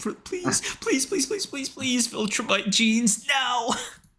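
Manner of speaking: put-on pleading whimper. Acting out his own pleading while friends tease him, mock whimpering. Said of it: "close my eyes and whimpering".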